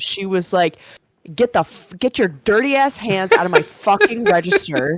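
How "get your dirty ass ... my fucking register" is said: mock-angry outburst, higher, louder. Retelling how a carryout worker caught a coworker at her register: mock-angry outburst. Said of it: "she flipped out on him".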